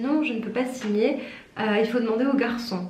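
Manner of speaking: ordinary delivery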